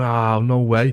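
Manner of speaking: acted-out speech through laughter. Telling a story about a man raging, retelling laughing while talking. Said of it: "So I'm laughing, going".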